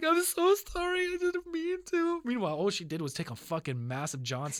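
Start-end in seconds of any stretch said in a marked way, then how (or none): 0.0-2.2 mock tearful crying, high, slow, voice way up. Retelling how she apologized after clogging the toilet, imitating someone crying. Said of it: "she's literally start starts crying".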